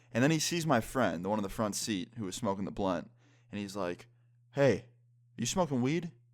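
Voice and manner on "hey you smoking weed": high, loud, stern delivery. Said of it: "gets really serious looking".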